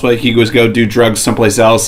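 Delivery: normal talking voice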